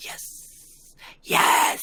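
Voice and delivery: sinister, very scary, evil villain voice. During a tabletop game session, replying in a very scary voice. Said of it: "this is a very scary voice".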